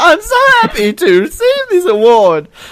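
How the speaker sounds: high, swooping squeaked voice. Retelling how an award winner sounded: squeaky pimply voice guy from The Simpsons. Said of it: "sounded like the squeaky, pimply voice guy from The Simpsons".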